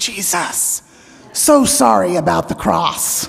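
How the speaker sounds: put-on child's voice in a half-whisper. Retelling what a young child said at the communion rail: imitating a child's half-whisper. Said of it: "he whispered to Randy".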